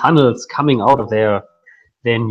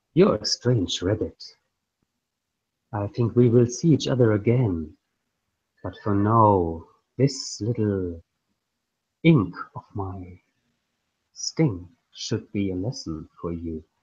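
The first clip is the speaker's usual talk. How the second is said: close-in, half-whispered scorpion voice; 3 semitones lower, 8 dB quieter than usual. A scorpion half-whispers in a rabbit's ear as it passes out: half-whispering scorpion voice. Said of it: "the voice of the scorpion of Sting whispering in your ear".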